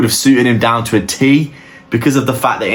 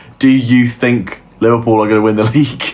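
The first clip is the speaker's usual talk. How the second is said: speech breaking into laughter. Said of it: "I couldn't say that without laughing".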